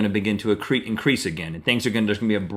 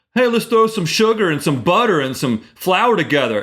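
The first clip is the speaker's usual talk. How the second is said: goofy, very high, loud put-on silly voice; 9 semitones higher, 6 dB louder than usual. Describing how people will see birthday parties after population contraction, in a silly voice. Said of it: "(silly voice)".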